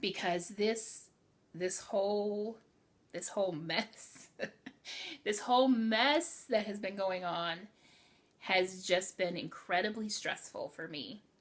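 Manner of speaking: tearing up, close to tears. The speaker, talking to listeners about something stressful, is tearing up. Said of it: "I'm tearing up now".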